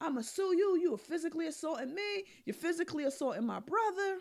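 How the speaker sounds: heated, threatening yell, words rattled off fast. Recounting a man threatening the police after being hit; retelling a yell. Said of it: "So he's yelling".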